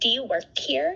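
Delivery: play-acted, spiteful, really nasty tone. Retelling what a stranger at a festival asked: imitating a really nasty tone. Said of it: "in, like, a really nasty tone".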